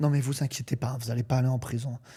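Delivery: tiny, small, reassuring little voice. Retelling how a judge read out the verdict: imitating a judge's little voice. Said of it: "elle prend la petite voix".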